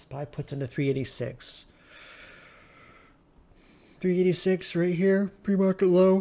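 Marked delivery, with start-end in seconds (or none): 4.0-6.2 pitched-up talking through a yawn, mid-sentence. Speaker recapping what he said about his pre-market trade, yawning. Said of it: "Sorry for yawning".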